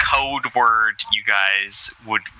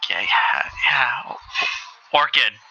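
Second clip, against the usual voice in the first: a little louder, panicky and nervous; 3 semitones higher than usual. Voicing a man repeating the code word: a little louder, panicky. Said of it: "As he says it a little louder".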